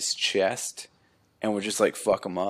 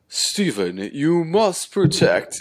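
daunting, loud, raised pronouncing voice; 8 semitones higher, 5 dB louder than usual. Retelling what a robed bird figure said in the episode: daunting voice. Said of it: "he had this really daunting voice like this".

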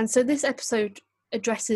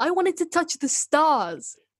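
bad put-on American accent, pitched up; 7 semitones higher than usual. Reading a Doctor Who scene aloud as Henry Van Statten: put-on American accent. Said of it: "get your American accent ready".

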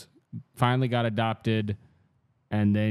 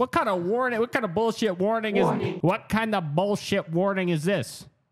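touchy, defensive put-on Chicago accent, very high; 11 semitones higher than usual. Reacting to a warning: defensive Chicago voice. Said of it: "a little defensive kind of voice that I did".

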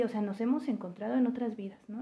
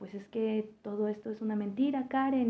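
plain

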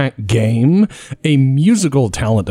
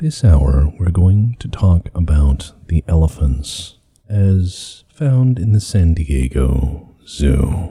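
very slow, unhurried public-radio announcer delivery; 8 semitones lower than usual. Joking with others about radio shows, doing an NPR host impression. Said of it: "that's what NPR does".

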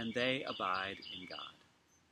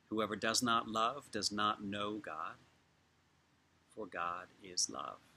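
slow reading with long pauses between lines. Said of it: "'cause I'm gonna read it slowly".

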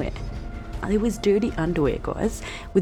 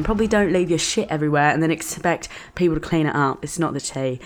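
plain

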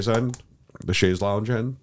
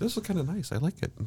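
high, soft mock voice. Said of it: "And then she'll be like".

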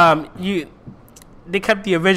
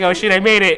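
ordinary talk

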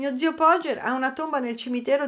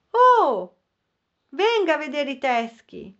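loud, called-out shout; 3 semitones higher, 3 dB louder than usual. He calls after the narrator, who is running away from him, shouting after him. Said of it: "lo udì gridarmi".

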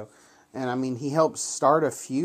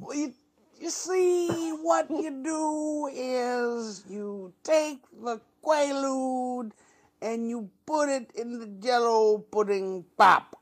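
very high voice, word "is" drawn out; 9 semitones higher than usual. Showing off the only impression you call yourself fantastic at, do a Bill Cosby impression. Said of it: "the only one that I'm fantastic at is William J. Cosby".

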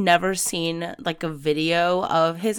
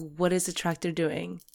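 put-on somber voice, much quieter; 8 dB quieter than usual. Retelling a race radio call to a listener, imitating Charles's somber voice. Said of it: "a very, like, somber voice".

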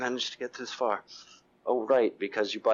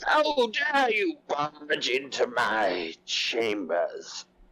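very slow, drawn-out, swooping, high hag voice; 5 semitones higher than usual. Voicing a woman barging out of her chambers: put-on hag voice. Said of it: "before I continue with that voice".

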